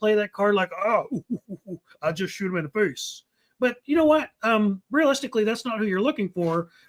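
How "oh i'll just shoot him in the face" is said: casual, low, offhand macho tough-guy bravado. Show host mocks the tough guy every group has, imitating a tough guy. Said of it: "there's always the tough guy".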